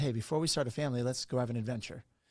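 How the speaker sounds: ordinary talk, nothing marked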